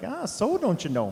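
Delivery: slight Minnesota accent. The speaker repeats the accent he just slipped into: minnesota accent. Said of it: "I just dropped a little bit of Minnesota accent".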